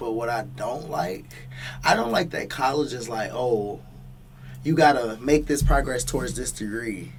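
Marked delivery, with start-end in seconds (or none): none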